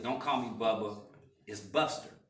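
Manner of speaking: usual speaking voice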